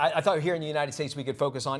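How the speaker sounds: plain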